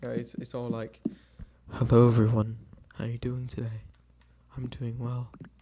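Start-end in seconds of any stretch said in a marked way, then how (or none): 1.7-5.3 raised, sophisticated, elegant and refined voice. Talking about a favorite character, the speaker shows off doing Yuri's voice. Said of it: "I quite enjoy doing her voice".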